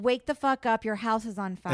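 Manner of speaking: ordinary delivery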